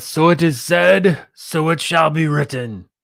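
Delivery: grand, lofty voice, pitched high. Quoting Moses as a biblical line: Charlton Heston impression. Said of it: "That was my Charlton Heston impression".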